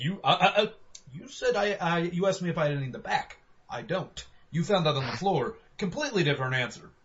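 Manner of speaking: mock patronizing, condescending, talking-down tone. Retelling own reply to a customer who claimed lying: condescending explanation. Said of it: "kind of in a condescending way".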